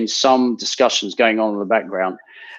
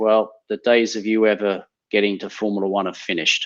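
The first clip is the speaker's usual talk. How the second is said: mock deadpan, dead-serious delivery. Speaker retells what he said to them before the race, retelling a deadpan reply. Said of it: "And he was deadpan".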